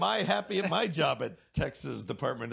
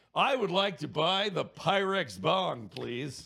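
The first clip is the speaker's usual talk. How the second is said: confident, self-assured 1950s dad voice; 3 semitones higher than usual. A speaker imagines walking into a weed store as a 1950s dad: confident 1950s dad voice. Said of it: "with my most confident voice say".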